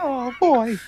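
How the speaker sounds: high-pitched cartoon mouse voice. Joining in imitating Tom Holland's Spider-Man: Tom Holland Spider-Man as Mickey Mouse. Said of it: "he's Mickey Mouse the whole time".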